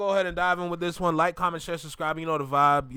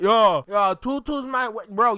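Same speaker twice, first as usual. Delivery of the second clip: mocking put-on Caribbean accent, higher and louder; 5 semitones higher, 7 dB louder than usual. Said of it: "You're making the Caribbean accent".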